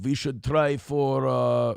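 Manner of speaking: very slow, terrible put-on Russian accent. Acting out the German prime minister's long speech to Trump, slip into a bad Russian accent. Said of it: "I don't know why I'm doing Russian now. I'm terrible with accents".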